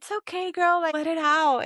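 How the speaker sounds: gentle soothing voice. Retelling how friends comfort someone who is crying: imitating a soft, gentle voice. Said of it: "soft and gentle and they're like".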